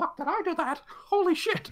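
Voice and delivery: very high, little cartoon-mouse voice. Voicing the character reacting as the ground swallows her: Mickey Mouse voice. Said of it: "Mister Kitty sounds exactly like Mickey Mouse".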